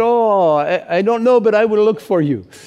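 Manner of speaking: bad put-on Spanish accent. Retelling what Jose Carlos answered about a denim vest, really terrible Spanish accent. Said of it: "which is a really terrible Spanish accent".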